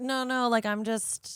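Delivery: slow, barely-there, hardly speaking voice. Retelling a co-working girl's answer to the group: imitating someone barely speaking up. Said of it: "barely answering or speaking up".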